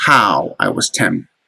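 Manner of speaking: first word "how" strongly stressed. Showing that a poetic line opens with a trochee: stress on how. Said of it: "this line opens with the Troche".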